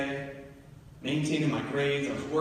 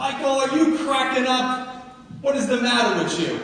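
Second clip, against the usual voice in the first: shrill, very loud, high-pitched put-on New York accent; 10 semitones higher, 9 dB louder than usual. Speaker retelling his mother's reaction to his plan to leave college: mom's new york accent. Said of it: "In a New York accent".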